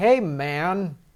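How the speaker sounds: nerdy try-hard cool voice, man drawn out. Imitating a school nerd trying to sound hip: imitating a nerd trying to sound hip. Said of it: "a nerd kid in schools is trying to sound hip".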